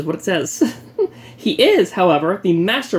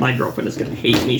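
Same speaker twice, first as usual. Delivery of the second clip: normal talking voice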